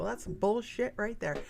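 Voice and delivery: ordinary talk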